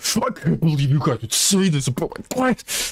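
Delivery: fake, high-pitched, very aggressive ranting outburst. A streamer acts out losing it at viewers: mock-aggro outburst. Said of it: "Gets super aggro".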